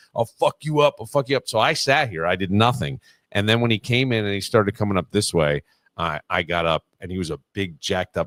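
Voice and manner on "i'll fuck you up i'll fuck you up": put-on raging, out-of-control, furious screaming. The speaker recounts a man who came in screaming at him; retelling a screamed threat. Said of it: "he starts screaming about me".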